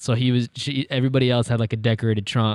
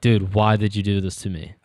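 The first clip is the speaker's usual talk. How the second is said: put-on, mock voices of angry children; 2 semitones lower than usual. Retelling how kids react to the trick: imitating mad kids. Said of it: "the kids just get really mad at you".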